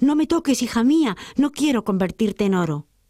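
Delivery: high, fearful voice.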